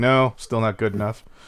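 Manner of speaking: ordinary talk, nothing marked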